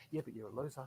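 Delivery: hushed, sly, very quiet inner-voice half-whisper. Acting out the inner voice of doubt: imitating a half-whispering inner voice. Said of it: "I can hear this little whisper".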